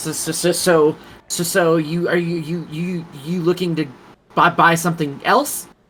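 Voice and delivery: trembling voice. A game narrator voices a character turning to the player; shaking voice. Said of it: "shaking his voice".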